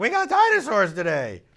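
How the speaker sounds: very loud, very high excited shout. Retelling what a teacher said at drop-off: imitating a loud teacher. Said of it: "She's like".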